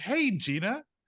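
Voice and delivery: sunny, bright high voice. Imitating someone greeting herself in the mirror: imitating Gina greeting with a big smile. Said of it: "with a big smile".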